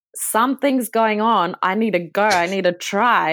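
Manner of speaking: normal talking voice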